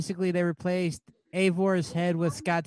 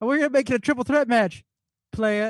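put-on British accent, pitched up; 5 semitones higher, 4 dB louder than usual. Retelling a line from Wednesday's NXT show: William Regal British accent. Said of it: "in his British accent".

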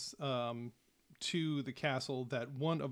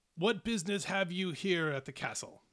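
high, loud call; 5 semitones higher, 3 dB louder than usual. Voicing a giant guard shouting down at the party: giant guard shouting down. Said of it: "he shouts down".

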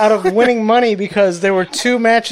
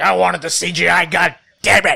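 upset, indignant, all worked up. Retelling how Vince McMahon got upset about a fake eyeball: imitating an upset Vince McMahon. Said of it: "he got all upset".

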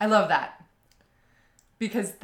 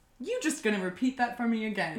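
plain

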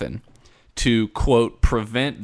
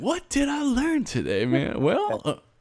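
very high, swooping, ponderous, thoughtful wondering aloud; 13 semitones higher, 4 dB quieter than usual. Mocking the other speaker's face: imitating the other speaker pondering. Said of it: "You were literally about to be like".

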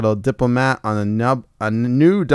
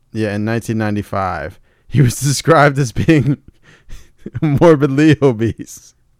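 giggling, laughing through the words. Reading out a grim fact to the other speaker, laughing while talking. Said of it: "Why are you laughing?".

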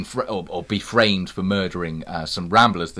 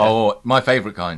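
ordinary delivery

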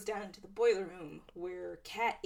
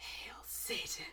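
eerie, creepy, warped, distorted whisper; 9 dB quieter than usual. Retelling a scene where a woman answers a man pointing a weapon at her, creepy distorted voice. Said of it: "in that creepy distorted voice".

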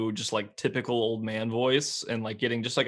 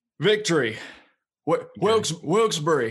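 put-on slow, loud old man voice; 6 semitones higher, 5 dB louder than usual. Trying to get into character for an impression: Joe Biden impression. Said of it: "see if I can get in character".

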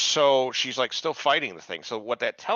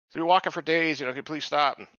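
put-on, begging, yelling cry; 5 semitones higher than usual. Retelling a scene where a woman yells at a driver: imitating someone yelling. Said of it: "this chick fucking starts yelling".

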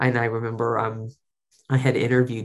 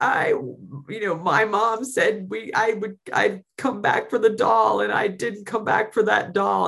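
put-on tearful, crying voice, higher pitch; 10 semitones higher than usual. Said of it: "crying, going".

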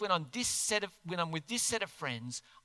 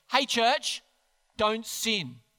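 mock-stern voice, louder and slower; 4 semitones higher, 4 dB louder than usual. Speaker imagines Paul telling the church not to sin, putting on a stern voice. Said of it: "in a really stern voice".

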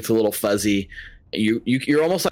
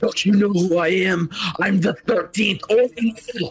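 high, taunting, righteously furious tone; 10 semitones higher than usual. Voicing a foe who taunts the players while fighting them, with righteous fury. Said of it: "got this like righteous fury as he's taunting you guys".

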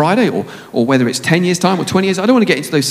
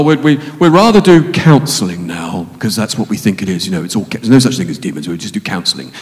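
very low, scornful, sarcastic mockery; 7 semitones lower than usual. Speaking about the church, the speaker turns sarcastic: sarcastic. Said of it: "I'm being sarcastic".

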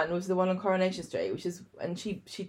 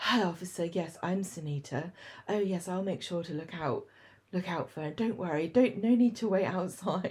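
put-on sexy, posh villain voice, quieter; 4 dB quieter than usual. Describing a character from a show's episode, imitating her lines: sexy posh villain voice. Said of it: "sexy, posh villain voice".

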